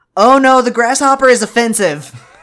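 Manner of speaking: delivery as if in all caps.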